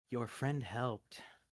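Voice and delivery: soft, hushed half-whisper. Narrating a game, the speaker voices something speaking in a character's ear, half-whispering. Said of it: "it almost seems to whisper".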